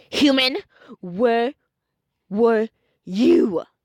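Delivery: slow, dark, menacing, evil tone. Reading a story aloud, Papyrus questioning the human: evil tone. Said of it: "he said with a more of a evil tone".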